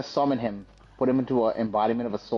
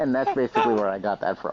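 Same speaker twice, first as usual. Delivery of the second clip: normal talking voice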